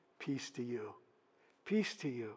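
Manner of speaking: low, soft, hushed voice.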